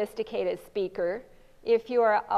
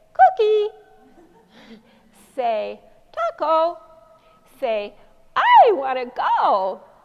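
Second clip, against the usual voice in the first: unnatural squeaky voice, very high and very loud; 7 semitones higher, 10 dB louder than usual. Demonstrating a model prompt given at an atypical pitch: unnaturally high pitch. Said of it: "the echoic model is too high uh, or it's at an unnatural pitch".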